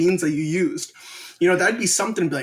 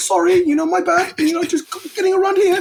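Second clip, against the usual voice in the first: put-on British accent, very high and loud; 6 dB louder than usual. Retelling how he apologized when bumping into people on the train, British accent. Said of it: "say it in a British accent".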